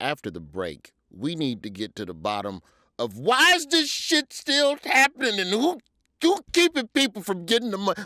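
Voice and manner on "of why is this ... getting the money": all-out yelling tirade, rising and swooping. Before a break, addressing the ladies present, yelling. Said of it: "I'm sorry for yelling".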